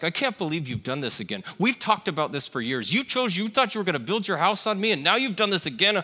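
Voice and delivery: scolding, condemning, accusing and judgmental tone. Describing the inner voice that accuses, imitating an accusing, judgmental voice. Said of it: "a voice that sounds like an accusation".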